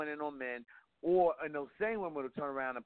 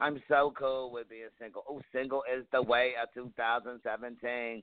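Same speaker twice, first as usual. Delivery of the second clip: usual speaking voice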